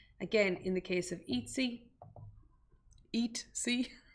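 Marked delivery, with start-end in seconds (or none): 3.2-3.9 said in a whisper. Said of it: "I'm even laughing at myself now at how I said it".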